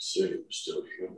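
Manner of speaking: muttered under the breath. Speaking in character after another character's claim, under the breath. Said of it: "under my breath".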